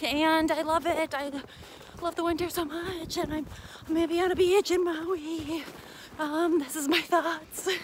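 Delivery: winded, breathless voice. Talking to viewers while out running in the winter, out of breath. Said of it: "I'm winded".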